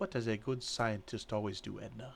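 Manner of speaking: hushed whisper. One character leans in so only another can hear: whisper. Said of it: "in a whisper that no one else can hear".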